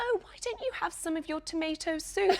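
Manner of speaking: put-on thick, laid-on, very English accent. Quoting what a woman once said to the speaker, in a very English accent. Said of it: "she said in a very English accent".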